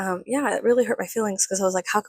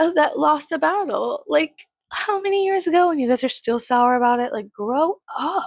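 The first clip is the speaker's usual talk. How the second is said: snide, snarky tone, higher pitch; 6 semitones higher than usual. Retelling a remark to a business owner: retelling own snarky jab. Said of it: "I was just being, like, a little bitch".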